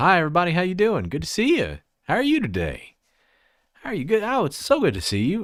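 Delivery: very high, thick, swooping Southern twang. Retelling walking in to greet everybody in Dallas: southern twang. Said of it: "You learn to stop the twang".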